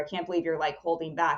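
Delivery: plain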